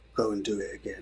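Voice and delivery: very hushed, quiet, low, sinister evil voice. Retelling what you'd say to someone who admits they didn't write it, put-on very evil voice. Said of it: "in a very evil voice".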